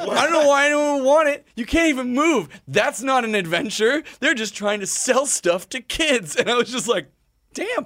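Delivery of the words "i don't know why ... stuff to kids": put-on, high, angry yelling rant. Retelling how she yells at the commercial every time it comes on: retelling her angry yell. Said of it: "she yells at it".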